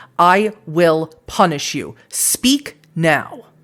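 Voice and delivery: furious, angry shouting. Voicing a character who gets in someone's face: shouting in anger. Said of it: "he begins shouting, and he's shouting so loud".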